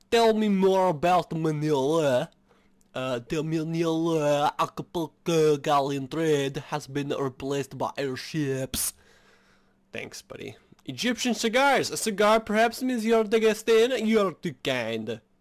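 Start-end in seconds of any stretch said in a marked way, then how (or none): 3.2-8.9 put-on weird French accent, slower. Answering a request to tell more about Manila, in a weird French accent. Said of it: "It's like the weirdest French accent I have".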